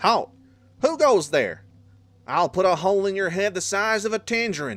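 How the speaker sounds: put-on southern accent. Voicing a character challenging someone, in a southern accent. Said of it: "You want to give him a southern accent?".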